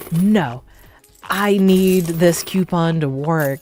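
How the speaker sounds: play-acted, desperate, insistent, drawn-out panicked pleading. Retelling a customer's words over a coupon, imitating someone freaking out. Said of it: "she was just freaking out".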